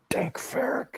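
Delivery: soft, hidden, muffled whisper. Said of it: "I just whisper".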